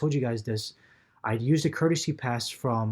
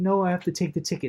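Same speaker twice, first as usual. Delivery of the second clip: put-on smug, self-satisfied voice, pitched up; 6 semitones higher than usual. Retelling the ticket taker's reply about taking the ticket: imitating a smug conductor. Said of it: "So smug, too".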